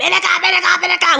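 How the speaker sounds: acted screaming. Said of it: "convulsing and screaming".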